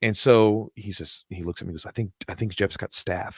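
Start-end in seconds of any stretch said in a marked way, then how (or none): 1.9-3.4 soft, hushed, secretive whisper. Retelling a student saying a gym member has staph: imitating someone whispering. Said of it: "whispering because we don't".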